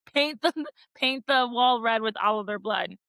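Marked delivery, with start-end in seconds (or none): none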